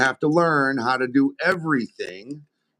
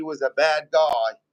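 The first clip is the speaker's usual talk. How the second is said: ordinary delivery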